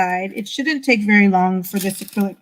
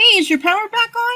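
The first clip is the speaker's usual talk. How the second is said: very high-pitched calling out, yelled; 13 semitones higher than usual. Greeting a viewer on the Gulf Coast while painting, yelling. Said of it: "Sorry, I'm all yelling".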